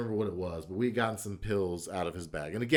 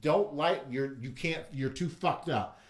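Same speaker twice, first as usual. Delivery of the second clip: mock yelling, higher pitch; 4 semitones higher than usual. Recalling a blackout night, the speaker quotes his buddy's girlfriend; retelling a yell. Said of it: "she's yelling at me like".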